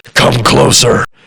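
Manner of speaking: put-on gargled, gurgling villain voice. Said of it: "he sounds villainous".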